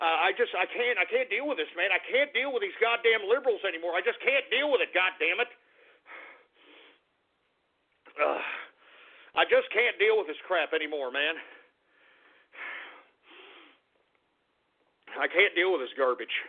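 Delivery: furious, fed-up, boiling-over rant. Stopping the broadcast, telling the folks he can't go on: furious. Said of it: "I am so damn angry".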